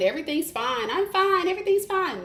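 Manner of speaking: high, forced, fake cheerful tone. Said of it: "give off to the world that you're fine".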